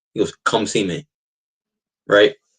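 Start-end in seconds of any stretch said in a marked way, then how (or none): 0.5-1.1 put-on firm, stern, no-nonsense voice. Retelling the football coach's reply at a meeting: imitating a stern voice. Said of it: "this stern fucking voice".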